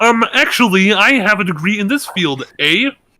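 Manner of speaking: high croaky frog voice. Mocking a Canadian professor's comeback, in a Kermit the Frog voice. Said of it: "a Canadian professor who sounds like Kermit the Frog".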